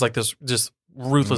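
ordinary talk, nothing marked

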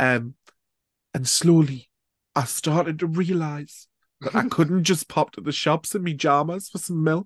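put-on slow, high Geordie accent. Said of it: "the [name] thing".

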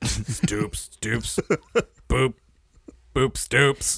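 slow, drawn-out, creepy monster voice. Asked to say a phrase in different ways, the speaker tries a Babadook voice. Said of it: "now you're trying to sound like the Babadook".

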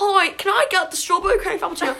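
put-on hardcore British accent. Speaker retells Ashley ordering from a barista; Ashley's hardcore British accent. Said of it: "goes on this full hardcore British accent".

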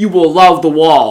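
loud, slow, stern monitor voice.

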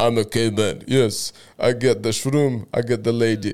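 put-on Russian accent. Retelling a psychedelic trip, answering his lady: put-on russian accent. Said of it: "Where did your Russian accent".

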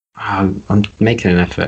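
defeated, beaten tone. Insisting they're trying to get the conversation back on track, defeated. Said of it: "I love how defeated you just sounded there".

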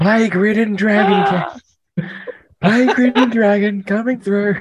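very high-pitched, shrill, loud shouting. A player character draws a sword and shouts at the armed guards on the dock. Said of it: "I'm just going to shout".

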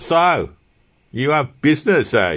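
slow, high, contemptuous sneer. Narrator reads a man answering someone who came in for breakfast, sneering. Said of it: "He sneered".

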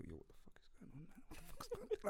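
whispered mutter under the breath. Retelling what he said to his friend: retelling an under-breath mutter. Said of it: "proper under my breath".

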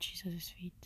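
soft whisper. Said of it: "why my voice is this low".

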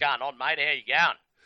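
played-up, exaggerated Australian accent. Greeting a friend from Australia, played-up Australian accent. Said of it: "that's not actually how I speak".

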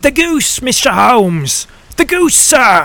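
gasping, dazed with astonishment, high and drawn-out. Peterson the commissionaire rushes in to Mr. Holmes, gasping out. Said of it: "he gasped".

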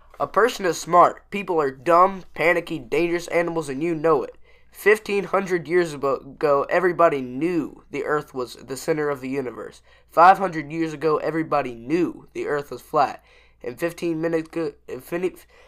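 normal talking voice

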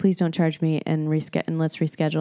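ordinary talk, nothing marked

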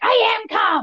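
least calm, very high, frantic freak-out. Retelling own comeback when told to calm down, imitating an uncalm outburst. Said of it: "In your least calm voice".

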